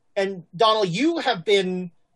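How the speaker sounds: ordinary delivery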